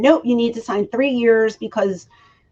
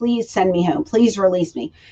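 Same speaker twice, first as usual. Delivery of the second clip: put-on crying, tearful begging. Retelling asking to be released early, acting out crying pleas. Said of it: "crying my eyes out".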